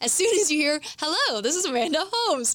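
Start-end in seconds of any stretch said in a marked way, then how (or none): 1.0-2.6 salesy sales-pitch tone, rising on Holmes. Teaching how to introduce yourself, demonstrating the salesy greeting to avoid. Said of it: "you know that you're about to get sold".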